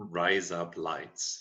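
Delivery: Australian accent. Teaching a listener a phrase to repeat, in an Australian accent. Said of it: "in with an Australian accent".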